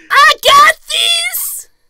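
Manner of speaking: very high, loud, belted-out shout. Performing a requested impression for the other speaker: George Lopez impression. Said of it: "my famous George Lopez impression".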